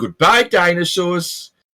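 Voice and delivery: put-on heavy Brooklyn narrator accent. Quoting a narrator's line that made the speaker laugh, thick Brooklyn accent. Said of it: "this thick Brooklyn accent narrator".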